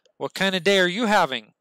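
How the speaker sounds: mock snide desk-sergeant voice. Speaker recounting how a desk sergeant greets them, mock-snide desk sergeant. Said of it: "he's a very snide individual".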